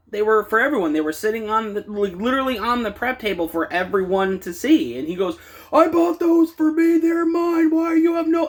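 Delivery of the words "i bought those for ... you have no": very high, screeching, screaming outburst. Retelling how a man screamed that the taken ones were his, imitating someone screaming. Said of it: "And he's just screaming".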